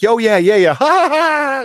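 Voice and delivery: loud, very high, slow, drawn-out ha-ha laughter. Mocking how Kamala Harris answered about smoking weed, imitating Kamala Harris's laugh. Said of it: "and her fucking laugh".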